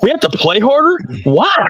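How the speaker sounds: mock, demeaning, disrespectful sarcastic sing-song. Complaining about his remark to fans: imitating him saying it sarcastically. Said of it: "He even said it like sarcastically".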